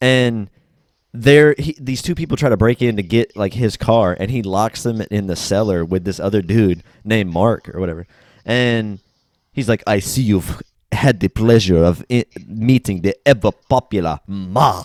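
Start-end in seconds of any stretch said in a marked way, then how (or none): 9.9-14.8 fake, exaggerated put-on French accent. Retelling a movie scene to a friend, a character trying to sound french, fake french accent. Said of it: "he's like trying to sound French".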